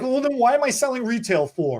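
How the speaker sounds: put-out, upset voice. Retelling a seller's reaction to customers ordering online: imitating someone upset. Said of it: "And then he's upset".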